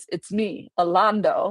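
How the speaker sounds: matter-of-fact, flat, no emotion at all. Retelling what a man on the street said to the speaker: imitating a straight-faced line. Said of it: "just straight face, he goes".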